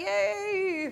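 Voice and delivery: drawn-out "yay" squeezed through gritted teeth. Recalling a best friend's big bonus news, retold yay through gritted teeth. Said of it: "through gritted teeth".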